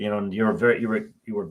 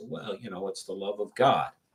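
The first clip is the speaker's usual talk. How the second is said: sarcastic, dismissive, mock-pious tone; 7 dB quieter than usual. Retelling a thought after a donor's lecture on unpaid work: retelling own sarcastic thought.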